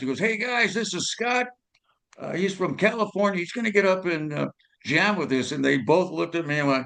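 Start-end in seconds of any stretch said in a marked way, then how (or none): 0.2-5.5 high, hollered voice calling out across a room. Retelling how a bandmate introduced him to the others: imitating someone yelling. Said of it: "he yells over to".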